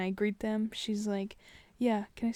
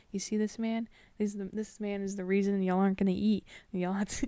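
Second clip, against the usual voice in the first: plain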